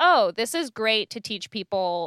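ordinary talk

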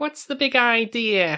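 put-on very high, drawn-out New York accent. Describing a hilarious woman, quoting her line in a typical new york accent. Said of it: "Like a typical New York accent".

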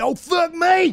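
angry, pissed-off tone, pitched way up. Retelling a road argument, the truck driver's comeback, imitating an angry retort. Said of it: "And he got pissed".

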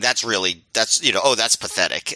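ordinary delivery

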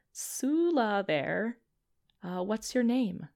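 faint, small whisper. A small voice pushes into the listener's mind asking their name, in a tiny little whisper. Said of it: "just a tiny little whisper push in".

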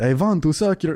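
put-on vampire voice, like an old count. Asking why Dracula talked that way, the speaker does a Dracula voice. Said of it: "Why did Dracula's talk like that?".

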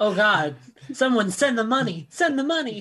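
high, desperate, pleading, begging voice. Voicing a pet dog who looks held for ransom: voicing the dog as a hostage. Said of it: "She always looks like she's being held for ransom".

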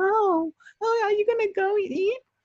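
put-on very high, slow baby-talk pet voice. Describing a woman who talks to people in dog voice, the speaker imitates her dog voice. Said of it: "she talks to you in dog voice too".

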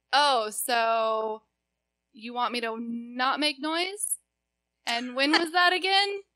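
pointed, snippy, slow, very drawn-out rude tone. Retelling a reply to a neighbour at the door: retelling own rude reply. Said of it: "That sounds pretty rude".

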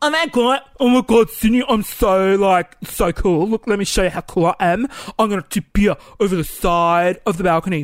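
mock voice of a dumb show-off guy. Acting out an imagined balcony conversation: mocking impression of a show-off guy. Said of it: "this is how I imagine it went".

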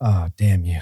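low exasperated shout.

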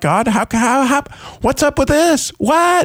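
put-on high, rising, escalating screamed outcry. Speaker reenacts getting mad at God, retelling a scream. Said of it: "and I'm screaming".

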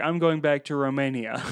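plain

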